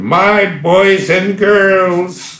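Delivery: very high, slow, squeaky little voice. Recall how the school's creator greeted the first class at assembly, in his squeaky little voice. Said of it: "in his squeaky little voice".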